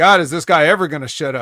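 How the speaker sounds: ordinary delivery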